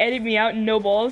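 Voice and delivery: plain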